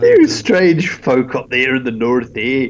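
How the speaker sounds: put-on Scottish-accented voice. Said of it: "That was a Scottish accent".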